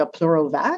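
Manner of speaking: put-on slight French accent. Asking for a Pleurovac, retelling trying it in French: slight French accent. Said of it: "with a little French accent".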